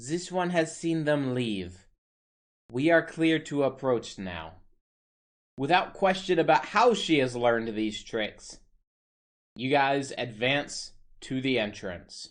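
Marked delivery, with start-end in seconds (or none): 0.0-4.5 sibilant, hissed delivery. A narrator voices a character hissing to the group once others depart, low hiss. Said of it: "she just hisses to you all in a low tone".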